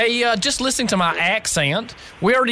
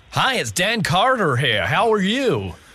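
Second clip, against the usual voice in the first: phony, fake, put-on American accent; 2 semitones lower than usual. Phoning the Trump Hotel and introducing oneself, fake American accent. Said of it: "just talk to them in your American accent".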